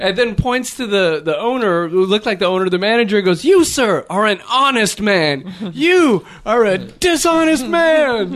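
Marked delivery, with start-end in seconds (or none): 3.4-8.3 high, slow, drawn-out yell, rising. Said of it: "Yelled it in the middle of the restaurant".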